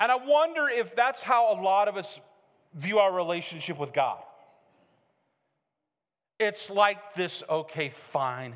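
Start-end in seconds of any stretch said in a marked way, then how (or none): 7.5-8.6 low, slow, grudging, feigned reluctant tone. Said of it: "fake sense of submission".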